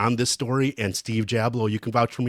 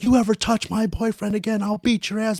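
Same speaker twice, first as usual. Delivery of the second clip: put-on girl screaming and yelling, much higher pitch; 10 semitones higher than usual. Retelling a girl from the stands screaming at friends in the penalty box, imitating a girl screaming. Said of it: "screaming and yelling at my friends".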